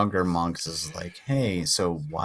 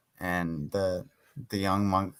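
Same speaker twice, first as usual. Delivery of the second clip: plain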